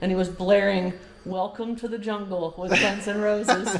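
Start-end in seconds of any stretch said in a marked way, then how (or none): none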